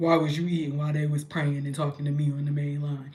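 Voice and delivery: deep, low, put-on heavenly almighty voice. Imagining someone at the pearly gates, the speaker questions them in a God voice. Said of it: "Why is that my God voice?".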